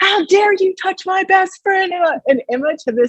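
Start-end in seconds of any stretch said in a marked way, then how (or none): 0.0-1.9 mock very high screaming outburst. Retelling a game where a goalkeeper was over their best friend: retelling a scream. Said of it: "I'm like screaming at her".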